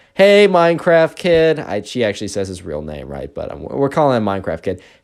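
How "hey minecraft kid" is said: acted, very loud, high-pitched call-out. Retelling a classmate calling out to another: imitating someone calling out loudly. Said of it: "very loudly".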